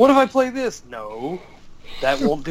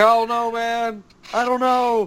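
acted, high, drawn-out, fretting whine; 6 semitones higher than usual. Retelling a worried friend's words the night before a tournament: imitating a whiny friend. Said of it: "Kyle was being super whiny".

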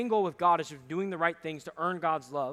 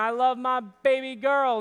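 slow, stretched-out, drawn-out screaming yell; 7 semitones higher, 7 dB louder than usual. Acting out a scene he says he didn't do at the Eiffel Tower: mock screaming. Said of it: "I wasn't screaming".

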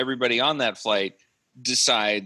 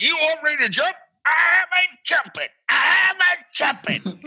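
put-on cartoon Texan voice, higher and louder; 4 dB louder than usual. Retelling an actor's jumping scene in a bad Yosemite Sam impression. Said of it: "doing a very bad Yosemite Sam impression".

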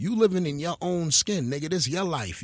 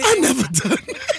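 very high, loud mocking tone; 11 semitones higher, 7 dB louder than usual. Mocking another speaker's denial by repeating it back in her tone. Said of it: "she said it in the exact tone".

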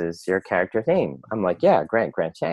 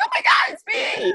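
put-on very high-pitched high school girl voice. Recalling someone walking into a stage reading, imitating a teenage girl. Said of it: "that imitation of a teenage girl".

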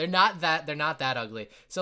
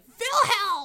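very high, thrilled, excited shriek; 5 dB louder than usual. Voicing goblinas greeting a returning character: excited scream. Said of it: "three, like, excited screams".

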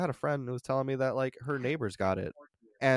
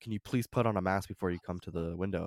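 put-on serious tone, lower and quieter; 6 semitones lower, 6 dB quieter than usual. Retelling a request made at the order window: imitating someone saying it seriously. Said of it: "she said it very seriously".

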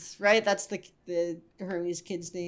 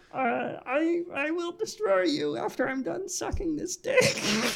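put-on cartoon alien voice, much higher; 11 semitones higher than usual. Joking about Amy as Marvin the Martian, the speaker tries it: bad Marvin the Martian impression. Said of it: "That's a bad Marvin impression".

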